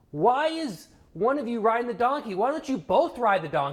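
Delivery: shrill, high yelling. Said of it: "someone yells".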